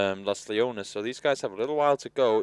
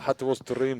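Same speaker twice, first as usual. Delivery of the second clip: put-on Scottish-accented voice. Repeating the other speaker's quoted line back to them: Scottish accent. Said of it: "That was Scottish".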